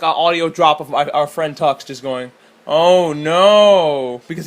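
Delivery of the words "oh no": louder, dead-even deadpan voice. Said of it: "he has such a great deadpan voice".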